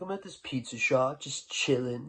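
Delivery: put-on loose, drunken, wasted-sounding speech. Retelling a phone call with a friend who's wasted: imitating a drunk friend. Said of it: "just the way he said it".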